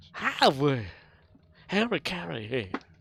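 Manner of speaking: put-on high announcer voice. Voicing a transport report line: Will Ferrell's Harry Caray impression. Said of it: "Like Will Ferrell's uh, Harry Carey".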